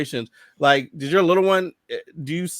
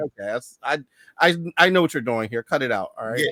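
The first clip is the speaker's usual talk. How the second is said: ordinary talk, nothing marked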